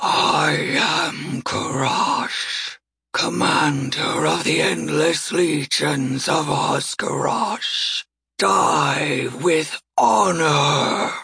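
empty, hollow voice of the undead. An undead gnoll commander speaks to his foes across a snowy expanse, hollow, booming voice. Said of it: "His voice is hollow, booming".

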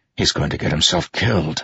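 ordinary delivery, nothing marked

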